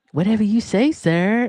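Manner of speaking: sugary passive-aggressive politeness. Showing how to answer someone at work: syrupy passive-aggressive tone. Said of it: "Passive aggressive, s-, like, syrupy".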